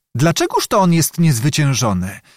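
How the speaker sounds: ordinary delivery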